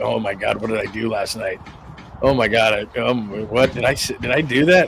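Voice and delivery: dazed, groggy bear voice, groping and fumbling for words. Voicing a bear in a video as if after a bender: voicing a hungover bear. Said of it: "Or he just went on a bender".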